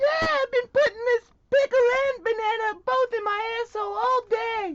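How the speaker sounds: high, squeaky talking mouse voice. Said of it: "You sound like a talking mouse".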